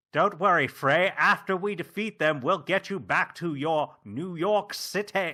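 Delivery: big, flamboyant, loud, high-pitched delivery. Imagining the game character voiced differently: Matt Berry voice. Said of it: "they would have had Matt Berry voice the Cuff".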